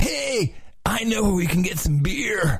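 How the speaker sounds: put-on surfer voice. Performing a party skit line in a character voice: surfer dude voice. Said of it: "I think I do one of them with my surfer dude".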